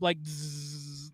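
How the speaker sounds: soft, low zzz laser buzzing sound.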